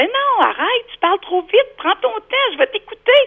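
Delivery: high, loud, insistent, impatient tone.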